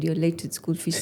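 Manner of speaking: ordinary delivery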